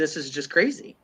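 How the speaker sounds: ordinary delivery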